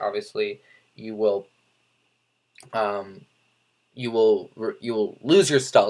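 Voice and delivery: low voice, stumbling stutter, tripping over and repeating words. Explaining a game character's abilities, stuttering over words. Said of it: "I'm like stuttering on my words".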